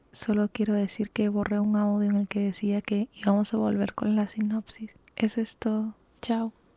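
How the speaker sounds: speaking softly. Speaking at three in the morning about a deleted audio: speaking softly. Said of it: "por eso hablo bajito".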